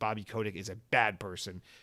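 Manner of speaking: ordinary talk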